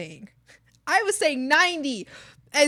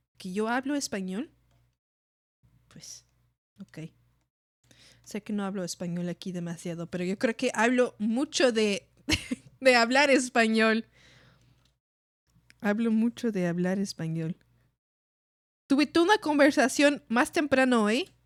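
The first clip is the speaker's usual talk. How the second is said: Spanish spoken with a Canadian English accent; 5 semitones lower, 3 dB quieter than usual. Speaking Spanish to a listener surprised they speak it, with a Canadian accent. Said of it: "Sé que tengo un acento en español canadiense".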